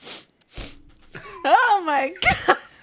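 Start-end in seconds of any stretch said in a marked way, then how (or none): 1.4-2.6 high, loud, slow exclamation of laughing disgust. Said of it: "He goes".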